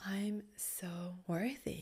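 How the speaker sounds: very quiet, hushed, sensual murmur. Demonstrating how to play with intonation to unlock sensuality, sensual. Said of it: "if you want to unlock more sensuality".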